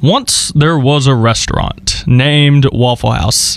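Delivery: deep commercial voiceover announcer read. Speaker opening a talk about a restaurant, in a deep commercial narrator voice. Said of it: "like a commercial narrator voice".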